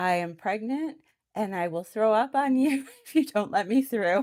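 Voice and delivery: loud high-pitched yelling. Retelling being elbowed in a packed store: imitating her own yell. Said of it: "I literally yelled".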